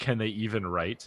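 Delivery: ordinary talk, nothing marked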